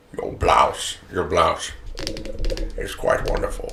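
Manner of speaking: hushed, breathy, seductive whisper. Imitating Sean Connery talking dirty: Sean Connery voice. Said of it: "what it would be like to have Sean Connery".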